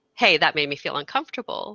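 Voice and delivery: ordinary talk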